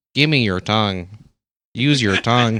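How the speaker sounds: robotic, speech-synthesizer voice. Joking about an imagined scene: Stephen Hawking voice. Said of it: "I can imagine Stephen Hawking".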